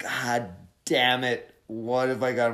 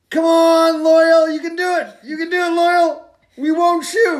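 very high, very loud cheering, rallying shout; 11 dB louder than usual. Recapping a story where a character cheers on a buddy, retelling a shout of encouragement. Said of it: "And then he starts shouting".

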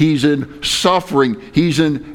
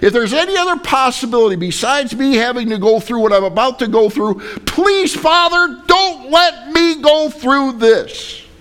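desperate, begging, pleading voice, pitched up; 9 semitones higher than usual. Retelling a prayer in absolute agony, acting out Jesus begging. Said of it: "He's begging him".

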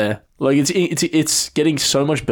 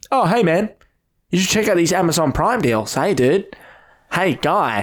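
talking through the nose; 3 semitones higher than usual. Mocking the messages Dylan sends him, nasally Dylan impression. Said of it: "Why did I get on nasally?".

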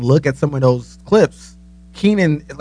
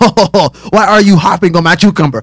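put-on French accent, higher and louder; 4 semitones higher, 5 dB louder than usual. Retelling a line from Everyday French with Pierre Escargot: Pierre Escargot French accent. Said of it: "doing his French accent".

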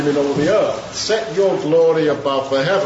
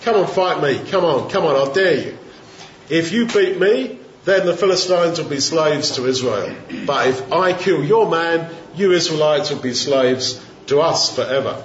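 plain

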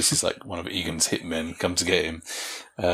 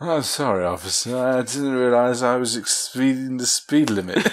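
loud put-on drunk shouting, pitched higher; 6 semitones higher, 3 dB louder than usual. Retelling a joke where a drunk man bumps into a police officer, drunk and loud. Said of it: "he kind of does that sort of i'm drunk so i'm talking really loud loud voice".

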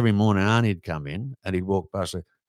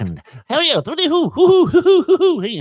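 put-on cartoon duck voice; 6 dB louder than usual. Retelling entertaining golfers while waiting: Daffy Duck voice. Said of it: "I'm doing Daffy Duck".

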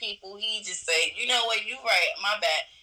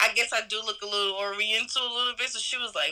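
usual speaking voice

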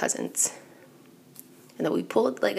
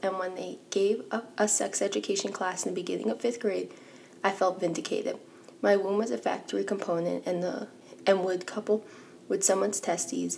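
ordinary delivery

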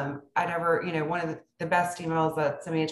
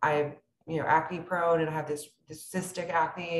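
ordinary delivery

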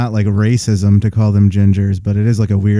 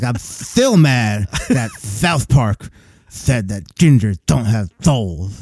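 mock big-underbite, jutting-jaw voice. Mocking a ranting man in a video: imitating a big-underbite voice. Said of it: "You can hear it in his voice".

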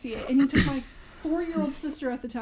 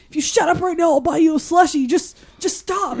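mock furious dad voice, angry, upset, losing patience; 3 semitones higher, 7 dB louder than usual. Retelling a dad hushing a crying child in a movie: imitating an angry dad. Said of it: "He was so angry".

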